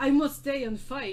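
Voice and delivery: put-on Russian accent. Describing what he could do watching Rocky Four, doing an Ivan Drago impression. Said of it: "do your best Ivan Drago impression".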